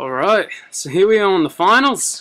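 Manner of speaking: hammed-up fake Irish accent. Opening the finals after rewatching a film, in a put-on Irish accent. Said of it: "I felt like talking in an Irish accent".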